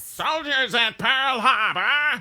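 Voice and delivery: fake old movie announcer screaming. Describing old movie announcers, imitating a screaming old movie announcer. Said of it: "the announcer always sounds like he's screaming".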